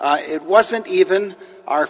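plain

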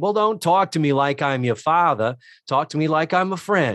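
put-on partway into a Boston accent. Recapping a sitcom scene, speaker voices the man's line in a partial Boston accent. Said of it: "I'm doing a partial Boston accent".

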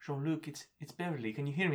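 slight put-on British accent. Quoting Beverly trying to wake Jean-Luc in sickbay, in a slight British accent. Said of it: "she does a little British accent for him".

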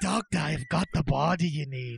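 put-on Scottish-accented voice, brogue. Acting out an 1800s body seller talking to a doctor, Scottish accent. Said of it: "Why is he Scottish?".

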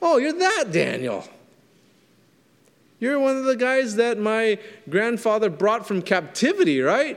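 condescending, disrespectful, haughty sneer, high and swooping. Acting out the king speaking to Daniel: imitating an arrogant, sarcastic king. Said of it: "how disrespectfully he treated Daniel".

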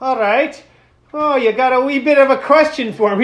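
put-on Irish leprechaun character voice. Retelling a chat with a man who asked for the leprechaun, answering in a leprechaun voice. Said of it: "the leprechaun voice".

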